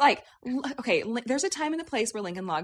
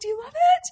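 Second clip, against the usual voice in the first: very high, put-on bubbling-over giddy excitement; 7 dB louder than usual. Retelling a mother asking about her gift: imitating giddy excitement. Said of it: "she was so giddy about it and excited".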